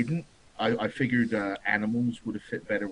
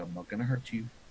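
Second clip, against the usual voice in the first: barely-there, soft, hushed half-whisper; 5 dB quieter than usual. A player's character, up in a tree, half-whispering to the tree. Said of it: "whisper to the tree".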